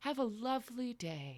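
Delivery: calming, soothing voice. Voicing a mysterious presence welcoming travellers: calming, soothing voice. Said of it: "a very calming, soothing voice comes to you and says".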